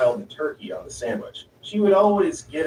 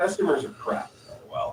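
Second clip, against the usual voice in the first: ordinary delivery, nothing marked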